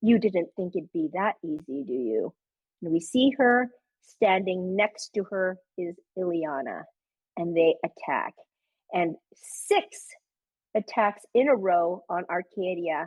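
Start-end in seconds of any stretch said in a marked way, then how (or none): 0.0-2.3 smooth, sultry, seductive put-on villain queen voice. Retelling the game, voicing the queen as she taunts the party: put-on sultry queen voice. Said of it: "sultry voice of the queen".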